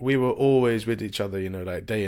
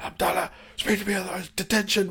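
put-on angry shout, higher-pitched; 10 semitones higher than usual. Retelling how a housemaster shouted during prayer: imitating someone shouting angrily. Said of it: "shouting at me".

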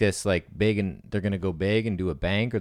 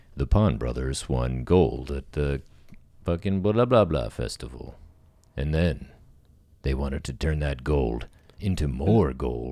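deep documentary voice-over announcer voice; 5 semitones lower than usual. Pitching ideas for a documentary, demonstrating the narration in an announcer voice. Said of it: "an announcer voice".

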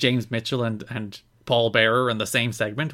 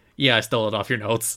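put-on sheepish tone. Retelling a commentator's reply about stolen notes: imitating a sheepish reply. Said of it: "And then Don sheepishly".

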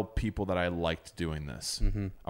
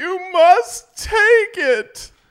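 crying wail, very high, loud and slow; 16 dB louder than usual. Speaker retelling an overtired child's outburst at bedtime, imitating crying and wailing. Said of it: "And crying and wailing".

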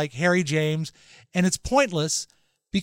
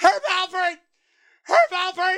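mock shrill, very high, repeated shouted yell; 13 semitones higher than usual. Recounting a lady next to them who kept standing up: retelling her yelling. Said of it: "She kept standing up and yelling".

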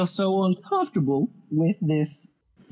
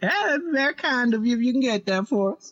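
put-on ancient old frontiersman voice, pitched up; 6 semitones higher than usual. In a role-play, Gus orders whiskey for himself and his boy: Gus's ancient old man voice. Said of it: "motherfucker's ancient as shit".

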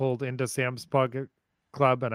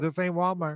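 acted, lightly done, high-pitched mild yelled jab; 5 semitones higher than usual. Retelling a parking-lot fight, quoting a lady: imitating a woman screaming. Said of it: "She said".

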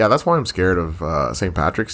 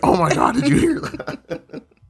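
very high, slow, drawn-out starstruck gasping voice.

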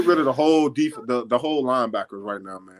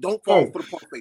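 mock screaming, higher pitch; 5 semitones higher than usual. Retelling yelling at the TV during a game: imitating own screaming at TV. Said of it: "I'm looking at the T V screaming".

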